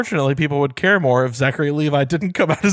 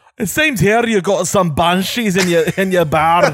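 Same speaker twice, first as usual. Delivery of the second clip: put-on Scottish accent, much higher; 3 semitones higher than usual. In an improvised ghost-hunting bit, Scooby speaks to a bar owner, Scottish accent. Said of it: "And then Scooby's just Scottish".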